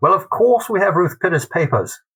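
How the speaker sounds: put-on high, loud English librarian's accent. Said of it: "excuse me for this accent".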